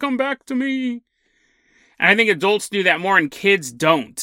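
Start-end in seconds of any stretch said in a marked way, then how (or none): 0.0-1.0 pained, high-pitched moan. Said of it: "a cockroach in pain moaning".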